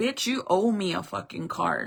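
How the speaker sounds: harsh, angry, mad voice with cursing. Retelling how the son talked at a restaurant: imitating someone talking angrily. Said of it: "he was, like, mad at me".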